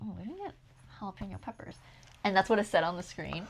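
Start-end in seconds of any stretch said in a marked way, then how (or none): 0.0-1.7 hushed, whispered under the breath. Retelling what a companion said at the grocery checkout: imitating a whisper. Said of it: "whispers to me".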